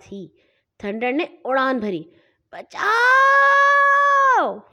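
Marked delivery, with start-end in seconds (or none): 2.5-4.5 very high-pitched, loud, shrieking scream. Flo flies through the air as Thunder leaps a high brick wall: crying out in midair. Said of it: "فلو ہوا میں اڑتے ہوئے چلائی،".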